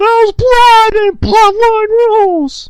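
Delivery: booming, shrill, drawn-out, slow belted shout. Imagining Pat McAfee reacting to blood in a bloodline rules match, bad Pat McAfee impression. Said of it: "that was a bad Pat McAfee impression".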